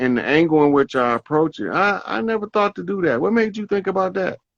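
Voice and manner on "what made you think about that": higher, enthusiastic voice. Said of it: "the enthusiasm in my voice".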